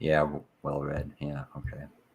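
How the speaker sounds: dismissive, uninterested, bored and flat tone. Showing the other speaker how to say they're right: bored tone. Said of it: "just say I'm right in a bored tone".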